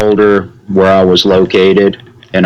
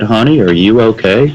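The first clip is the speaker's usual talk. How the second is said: play-acted, perfectly calm, unruffled tone. Retelling what a woman said behind a dumpster: imitating the calmest voice. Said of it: "said with the calmest voice".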